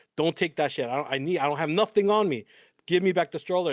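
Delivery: put-on pleading, begging tone. Retelling begging a kid in a dream to return the stroller: retelling own begging. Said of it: "and I'm begging him".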